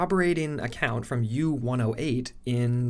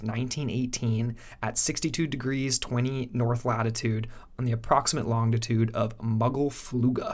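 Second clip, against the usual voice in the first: ordinary delivery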